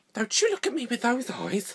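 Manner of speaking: stern scolding tone. Imitating what mothers say: imitating a mother. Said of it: "I hate it when mothers say this".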